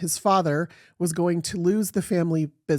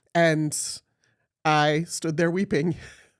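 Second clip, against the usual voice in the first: ordinary talk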